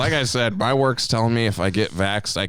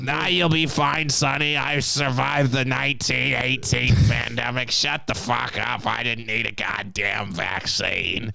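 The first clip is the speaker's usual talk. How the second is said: put-on rough, crusty, creaky old grandma voice, high; 5 semitones higher than usual. Acting out a scene, voicing a grandma talking to Sonny, old grandma voice. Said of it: "that was your grandma's voice".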